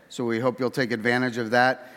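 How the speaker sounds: plain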